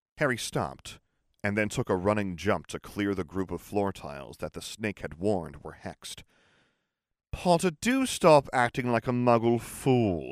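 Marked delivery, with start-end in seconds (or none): 7.3-10.3 long, lazy, slow drawl with raised pitch. Narrator reading Draco speaking to Harry from just behind him, drawling. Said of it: "drawled Draco from just behind him".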